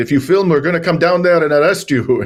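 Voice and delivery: put-on speaking with an Israeli accent. Retelling what the embassy's head of security said on the phone, thick Israeli accent. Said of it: "this guy says to me in his thick Israeli accent".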